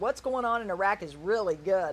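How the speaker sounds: ordinary talk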